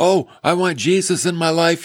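put-on weepy, tearful emotional outpouring. Retelling people saved on an Easter Sunday: imitating people crying. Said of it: "they were crying".

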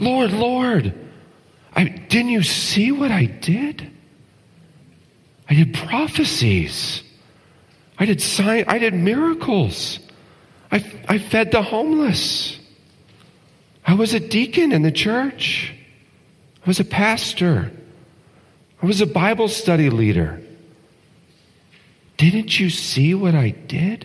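very high, astonished, surprised pleading tone. Speaker voices people addressing the Lord about their deeds, acting out surprise. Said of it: "Do you hear the surprise in their voice?".

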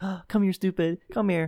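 sugary, sweet, very high-pitched coaxing voice. Calling someone else's dog over while insulting it, in a high-pitched sweet tone. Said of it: "saying something in a high-pitched tone so it sounds nicer".

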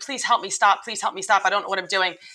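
put-on tearful crying through tears. Retelling being run away with on a horse: imitating herself crying and pleading. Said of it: "I would literally be crying on the horse".

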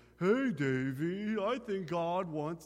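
very slow, drawn-out cartoon dog voice. Recalling an old show, the speaker imitates how its dog talked, imitating the dog. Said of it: "he always talked like this".

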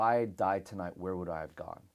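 ordinary delivery

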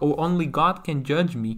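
plain

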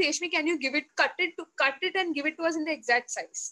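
ordinary talk

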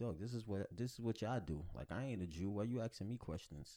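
acted smug, self-satisfied, condescending talking-down voice. Retelling a ruler answering as if annoyed at being asked: imitating a smug tone. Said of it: "Very smug. Like".

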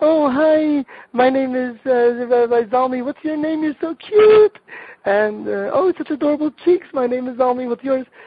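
put-on very high, loud cooing baby talk.

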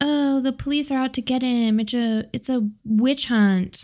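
snide, scoffing, mocking sarcasm. Retelling what a woman said about the police, mocking eye-rolling imitation. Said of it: "she was also like ... Eye roll".

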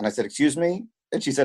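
ordinary talk, nothing marked

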